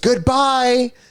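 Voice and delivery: put-on very high, shrill little child's shriek. Retelling a camping story, imitating a child screaming goodbye. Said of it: "she just screams".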